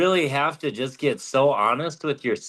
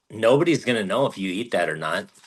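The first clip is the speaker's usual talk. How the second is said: tongue-in-cheek, sarcastic jab; 4 semitones lower than usual. Retelling own past words to Regina: imitating a sarcastic remark.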